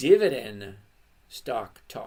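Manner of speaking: very slow, drawn-out, loud delivery.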